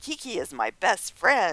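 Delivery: put-on pouty little girl voice. Retelling how a woman refused to be taken away, imitating a pouty little girl. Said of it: "almost like a pouty little girl".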